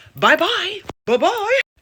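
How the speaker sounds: high, loud, mocking taunting voice.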